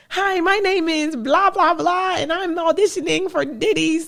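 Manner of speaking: squeaky little voice, very high-pitched. Recalling her young self at an audition, speaking in a squeaky voice. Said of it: "just squeaky voice".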